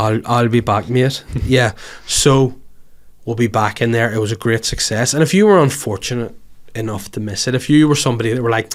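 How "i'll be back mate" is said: put-on very slow, drawn-out Geordie accent. Repeating a famous movie quote, trying it in another accent, Newcastle accent. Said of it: "Was that like a Newcastle?".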